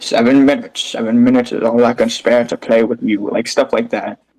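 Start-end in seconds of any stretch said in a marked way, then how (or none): 0.0-3.3 cartoony, evil British villain accent. Describing a voice Wesker doesn't have, the speaker demos a cartoony British evil voice. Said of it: "cartoony British evil voice where it's like".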